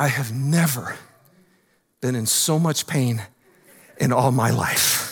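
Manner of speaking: hushed, low, very quiet and very slow. Quoting a former pro player who suddenly went quiet: imitating someone talking quietly. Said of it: "he got super quiet".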